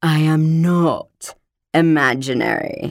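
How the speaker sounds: strange, shivery cat voice. Narrator reading the talking cat's reply to the boy, Demerara's strange shivery voice. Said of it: "A strange, shivery voice said".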